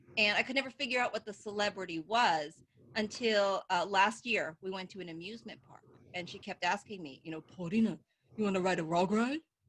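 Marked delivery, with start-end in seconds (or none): 7.4-9.4 cartoon dog voice, "log" said as "rug". Retelling her mom asking about a ride at an amusement park: imitating mom's Scooby-Doo voice. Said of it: "It's Scooby-Doo".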